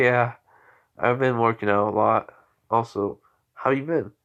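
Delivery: ordinary delivery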